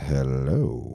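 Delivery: would-be seductive, low, drawn-out sexy voice. Retelling greeting a woman back in bed, putting on a sexy voice. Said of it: "I say it on sexy voice".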